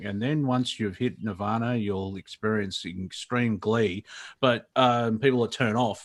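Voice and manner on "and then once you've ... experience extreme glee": level, unvaried, flat monotone drone. Showing how a message sounds when spoken in a monotone. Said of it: "if we're just speaking in a monotone".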